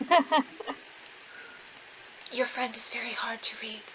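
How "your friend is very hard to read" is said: soft whisper. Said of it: "I whisper to Mira".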